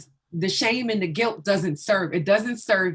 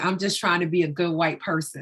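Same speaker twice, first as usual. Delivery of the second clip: mock, rushed, tearful words, crying while speaking. Retelling what a teacher said after a training, coming up crying: imitating a teacher crying. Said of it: "come up to me crying and saying".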